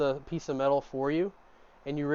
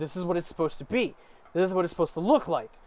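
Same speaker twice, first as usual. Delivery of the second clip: mock fed-up, frustrated, exasperated insistent tone; 3 semitones higher than usual. Narrating a character struggling to forge a hammer in a dream: frustrated. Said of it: "And you're frustrated".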